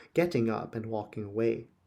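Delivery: ordinary delivery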